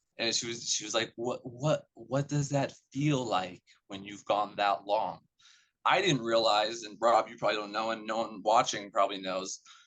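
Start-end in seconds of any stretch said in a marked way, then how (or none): 1.2-5.2 put-on whisper. Recounting a nurse who came up and asked them a question, imitating a nurse's whisper. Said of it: "Why are you whispering to me?".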